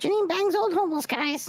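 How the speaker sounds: very high, piping talking-parrot chatter voice. Showing off a pirate costume's talking parrot: talking parrot voice. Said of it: "The parrot talks".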